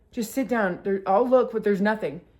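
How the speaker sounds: usual speaking voice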